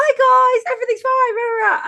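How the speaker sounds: very high, loud, drawn-out influencer voice. Speaker imitates a man greeting viewers whenever he went live: influencer voice. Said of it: "It's the influencer voice".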